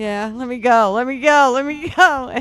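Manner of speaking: loud, drawn-out, scared, pleading tone. Retelling being trapped alone in a haunted house: imitating own frightened plea. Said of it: "I am just so freaked out".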